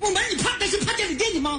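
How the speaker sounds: quick, high-pitched shouting.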